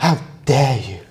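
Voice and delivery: indignant, accusing tone, every word hit hard. Offering an example voice to another person in conversation, do a Greta Thunberg impression. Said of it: "Or like Greta, Greta Thunberg".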